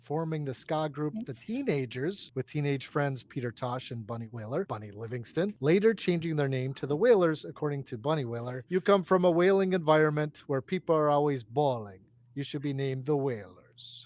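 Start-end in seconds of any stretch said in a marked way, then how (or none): 8.7-14.1 really bad, clumsy put-on Jamaican accent. Retelling what was said about the band's name, in a really bad Jamaican accent. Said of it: "that's my really bad Jamaican accent".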